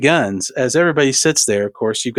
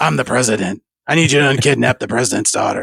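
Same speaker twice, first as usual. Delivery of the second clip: rumbling, gravelly voice, pitched lower; 3 semitones lower than usual. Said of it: "That's his voice".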